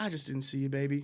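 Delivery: imitated sweet elderly lady voice. Retelling what the driver said after the near accident: imitating a sweet old lady.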